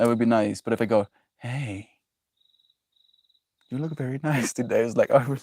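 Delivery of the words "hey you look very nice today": unsettling, creepy way of speaking. Showing how a compliment sounds when said creepily: creepy tone. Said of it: "I can be creepy sometimes too".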